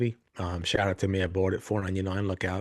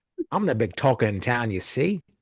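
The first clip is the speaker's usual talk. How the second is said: put-on old-timey gangster accent; 3 semitones higher than usual. Podcast host asked to do old gangster talk, old-timey gangster accent. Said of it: "listen to that all day".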